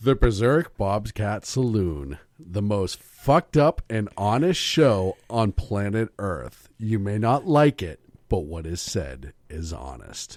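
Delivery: low promo announcer voice. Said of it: "I do have a really good voice for promos".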